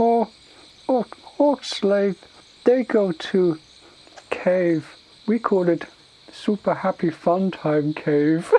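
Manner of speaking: high broken-English ogre voice. Retelling a role-playing game exchange, doing the Tauren voice. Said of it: "And he's like".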